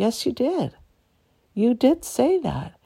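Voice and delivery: put-on calm, almost laughing. Retelling their answer to a brother in their dying mother's room: retelling a calm, half-laughing reply. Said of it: "I said to him calmly, and I'm almost laughing at him".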